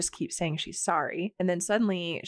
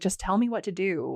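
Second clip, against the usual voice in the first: put-on wailing. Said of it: "while she's still wailing".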